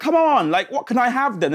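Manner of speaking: frustrated pleading. Retelling asking the school server what they can have instead, retelling frustrated pleading. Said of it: "very soon I get frustrated, going".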